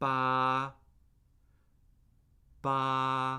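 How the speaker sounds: ba held high and flat, first tone. Teaching basic Chinese tones, the speaker demonstrates the first tone: high and flat. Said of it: "High, flat, and unchanging".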